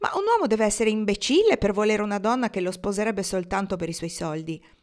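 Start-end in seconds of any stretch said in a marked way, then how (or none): none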